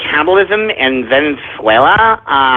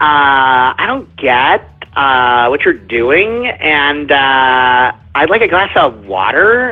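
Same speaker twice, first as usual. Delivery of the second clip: rising uptalk at the end of every phrase; 4 semitones lower than usual. Ranting about people who make every statement a question: mocking uptalk, statements as questions. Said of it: "talk to me like every statement that's coming out of their stupid pussy whip mouth is asking me a question".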